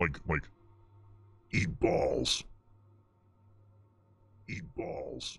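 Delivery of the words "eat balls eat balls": deep demon voice, quieter. Showing how someone else is doing the line: deep demon voice. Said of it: "demon deep".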